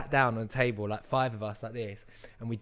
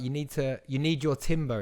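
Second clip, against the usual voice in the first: usual speaking voice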